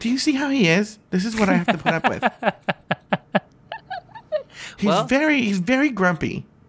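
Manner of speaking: chatty, swooping sing-song voice. Retelling what his mom said about him, imitating his mom's voice. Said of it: "I did my mom's voice for that".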